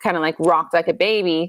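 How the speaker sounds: ordinary delivery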